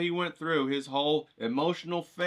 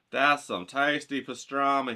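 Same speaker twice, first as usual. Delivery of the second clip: usual speaking voice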